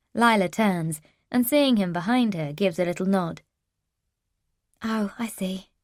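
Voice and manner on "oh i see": level, flat, toneless, deadpan delivery. Lila, seeing Lawrence appear behind her, speaks to Steph in a flat voice. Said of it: "she says in a flat voice".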